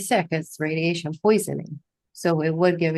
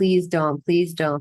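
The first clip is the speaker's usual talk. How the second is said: mock crying with a tearful pleading tone. Retelling a story where a girl begs a nurse, imitating someone crying. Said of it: "She's crying".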